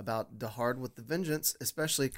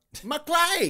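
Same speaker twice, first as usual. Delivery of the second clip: put-on screaming, higher and louder; 8 dB louder than usual. Echoing a movie line just quoted: imitating Samuel L. Jackson screaming. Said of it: "That was impressive".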